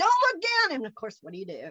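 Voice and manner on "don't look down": piercing, very high-pitched barked shout. Retelling what skydiving staff called out at the plane door: imitating someone shouting. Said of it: "they s-, shout at you".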